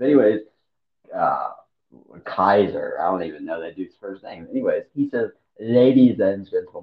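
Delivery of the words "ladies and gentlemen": put-on strange German-sounding accent, louder. Retelling how a wrestler greeted the crowd: weird German accent. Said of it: "in a weird German way".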